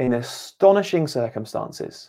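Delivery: plain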